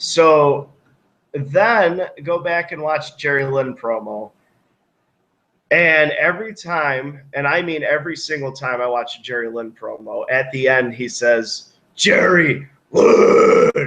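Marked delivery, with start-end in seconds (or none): 12.0-13.9 loud shout sounding like a dying dog. Retelling the end of a wrestling promo: Jerry Lynn shout like a dying dog. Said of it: "You sound like a dying dog".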